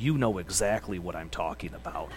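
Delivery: grave, very stern, very low voice. Retelling a man confronting the speaker about an unsecured bolt: imitating a very stern voice. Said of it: "in a very stern voice".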